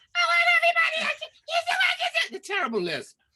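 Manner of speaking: put-on very high, lilting, swooping little girl voice. Describing a great conqueror character giving orders, the speaker does him in a little-girl voice. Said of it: "sounded like a little girl".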